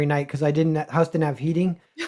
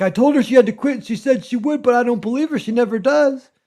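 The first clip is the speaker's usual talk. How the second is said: put-on elderly man voice, pitched up; 7 semitones higher than usual. Retelling what a lonely old man at a booth said: impression of an old man. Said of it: "That's a great impression".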